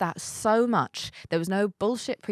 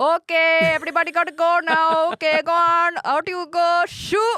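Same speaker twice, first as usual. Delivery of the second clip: very high, loud put-on Indian accent; 10 semitones higher, 8 dB louder than usual. Standing up and shooing everyone out of the house, put-on indian accent. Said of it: "I put on an Indian accent and I just go".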